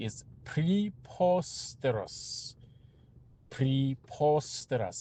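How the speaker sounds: "preposterous" sounded out slowly, carefully, deliberately. Calling in about a hard word, saying it slowly. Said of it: "I'm gonna try say it slowly again".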